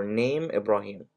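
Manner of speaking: ordinary talk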